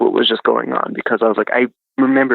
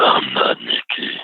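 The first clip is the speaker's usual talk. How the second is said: very deep, gargling, terrifying demonic voice; 11 semitones lower than usual. Retelling a ghostly encounter, imitating a deep gargly demonic voice. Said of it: "I can hardly imitate it".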